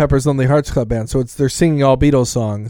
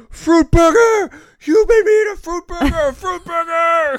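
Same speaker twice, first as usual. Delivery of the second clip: acted, very high-pitched, stretched-out, drawn-out yell. Retelling a movie scene where a tricked character yells: imitating Scott Valentine yelling. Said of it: "he starts yelling".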